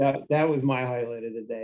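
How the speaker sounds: ordinary talk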